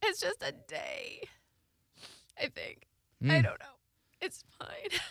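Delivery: tearful whisper through crying. Asked on the video what is making them emotional, answering while crying. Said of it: "I can't stop crying".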